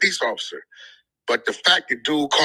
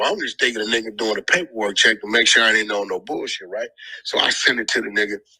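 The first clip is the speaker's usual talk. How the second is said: usual speaking voice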